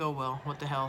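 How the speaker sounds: ordinary talk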